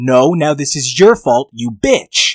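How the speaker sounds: put-on loud scream. Recapping a story, acting out a character screaming at Mother, retelling a scream. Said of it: "She is literally screaming at her mom".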